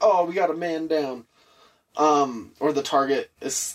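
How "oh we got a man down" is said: ordinary talk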